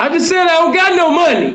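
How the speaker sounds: high-pitched, screamed, sharp voice. Retelling what she said back to him, imitating someone screaming. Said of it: "who the fuck is you screaming at?".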